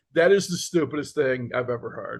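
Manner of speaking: ordinary talk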